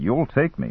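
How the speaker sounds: ordinary delivery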